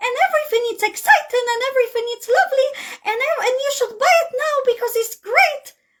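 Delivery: very high, gushing, over-excited salesperson voice. Showing how a seller's tone changes at the sales pitch: over-excited sales pitch tone. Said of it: "you change your tone and you started to talk like this".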